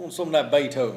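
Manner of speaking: fake put-on Southern accent. Joking about classical music, the speaker puts on a southern accent. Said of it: "southern accent".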